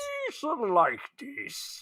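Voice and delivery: slow, breathy, half-whispered regal drawl. Imitating the Gungan King to another speaker: Gungan King voice. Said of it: "That was a perfect interpretation".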